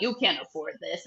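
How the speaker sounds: put-on thick German accent. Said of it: "He's got a really thick German accent".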